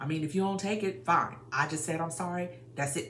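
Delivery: loud, dismissive, condescending delivery with attitude. Showing how not to give an apology: condescending non-apology. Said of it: "without attitude, without condescending, without being like".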